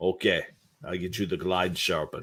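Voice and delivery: put-on Russian accent. Retelling what the skate sharpener asked: imitating a Russian accent. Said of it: "there's this Russian guy, like, real Russian".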